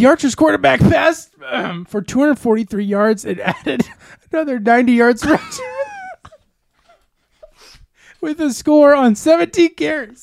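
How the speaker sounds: holding back laughter. Reading a player's stat line aloud to the group: holding back laughter. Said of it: "I'm trying not to laugh, and it's making me cry".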